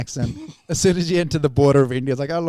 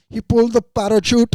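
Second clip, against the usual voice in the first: put-on newsreader-style Indian English accent, pitched up; 8 semitones higher, 4 dB louder than usual. Imitating a tv news reporter the speaker's parents were watching: indian english accent. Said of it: "it's just a funny accent".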